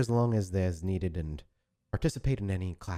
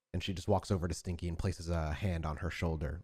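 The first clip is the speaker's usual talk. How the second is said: usual speaking voice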